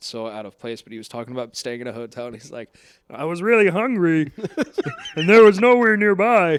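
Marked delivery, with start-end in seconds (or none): 3.1-6.6 very high-pitched, loud comic voice. Retelling a comedian's hotel story, doing a Ray Romano impression. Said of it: "What a great impression".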